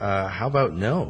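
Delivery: normal talking voice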